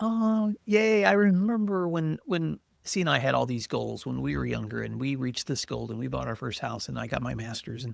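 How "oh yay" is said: put-on high, happy little cheer. Retelling own reaction to a friend's news, imitating own celebrating.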